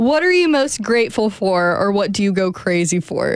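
ordinary delivery

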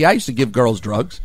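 plain

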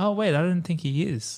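ordinary talk

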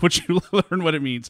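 talking through laughter. Explaining a term after a microphone fell, laughing while talking. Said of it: "I'm laughing".

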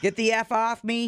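put-on shouted line, mild and held in check. Retelling a video of a man wrestling a cop; retelling a yell. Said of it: "he yells at the cop".

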